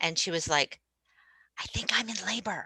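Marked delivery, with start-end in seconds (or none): 1.6-2.7 secretive, hushed, pitched-up whisper. Retelling a client's early-morning phone call: imitating someone whispering. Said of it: "she was kinda whispering into her phone".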